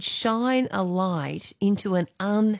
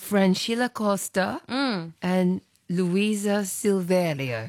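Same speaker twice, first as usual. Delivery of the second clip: put-on Brazilian accent, best attempt. A presenter reads out the names of two nuns: best Brazilian accent. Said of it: "with our best Brazilian accent".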